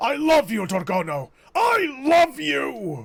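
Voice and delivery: loud, full-throated bellowing outburst. A character, asked if well enough to fight, answers; bellowing loudly. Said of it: "Your bellowing has given us away".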